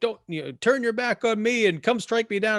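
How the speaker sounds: put-on very high, shrill scream rising upward. Retelling how Levy screams at the sky: imitating Levy screaming at the sky. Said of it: "he actually starts screaming at the sky".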